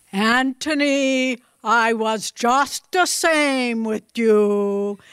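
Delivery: put-on gentle Bengali-accented English, drawn-out "you". Telling a story, the speaker quotes the Master's reply in a Bengali accent. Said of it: "in his wonderful Bengali accent".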